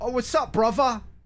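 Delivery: put-on London youth street accent, very high pitch. Mocking how young people in parts of London talk: London street accent. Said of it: "where they talk like this".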